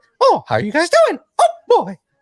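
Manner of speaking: very high, loud, swooping cartoon voice. Doing fun voices as an example: Mickey Mouse voice. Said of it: "doing fun voices and stuff like".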